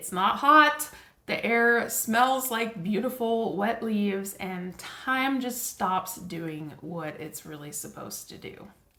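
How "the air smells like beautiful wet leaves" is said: ordinary talk, nothing marked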